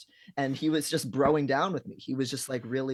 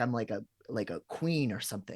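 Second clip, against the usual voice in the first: plain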